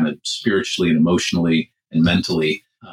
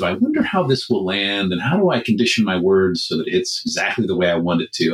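usual speaking voice

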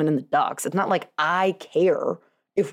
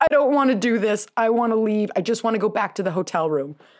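mock tearful, bawling, sobbing child voice; 4 semitones higher than usual. Retelling how a daughter answered at the ticket desk: imitating a bawling child. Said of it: "starts, like, bawling".

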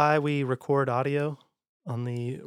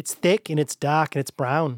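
attempted put-on Australian accent; 3 semitones higher, 3 dB louder than usual. Describing Vegemite while attempting an Australian accent. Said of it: "My accent is".

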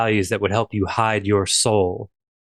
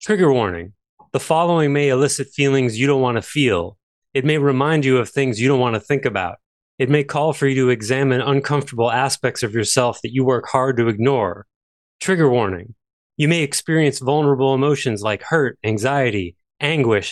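slam-poet spoken-word performance delivery; 3 semitones higher than usual. Reading out a poem written at 2 a.m., in poetry slam delivery. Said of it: "supposed to be read in a poetry slam kind of voice".

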